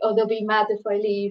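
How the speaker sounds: ordinary talk, nothing marked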